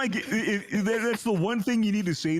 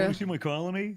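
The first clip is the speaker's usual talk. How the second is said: usual speaking voice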